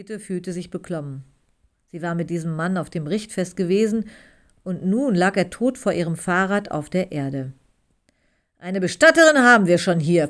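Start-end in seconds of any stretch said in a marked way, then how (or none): 8.6-10.3 growled words. Reading a novel excerpt aloud, voicing Ole's reply, growled. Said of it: "knurrte Ole".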